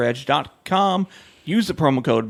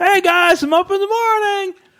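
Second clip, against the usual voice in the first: mock loud announcing, higher and louder; 4 dB louder than usual. Imitating a friend announcing what he does: imitating a friend loudly announcing. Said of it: "he just announces everything he's doing".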